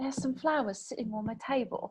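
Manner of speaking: put-on, fake British accent. Trying out an example sentence, in a put-on British accent. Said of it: "I'll try to say it in like a British accent".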